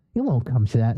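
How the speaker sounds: plain reading voice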